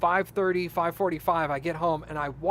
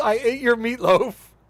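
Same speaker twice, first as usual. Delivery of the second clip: put-on sobbing, loud, high tearful wail; 5 semitones higher, 7 dB louder than usual. Retelling how she reacted on hearing about the meatloaf: imitating someone crying. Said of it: "she immediately cries and says".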